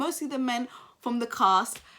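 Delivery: ordinary delivery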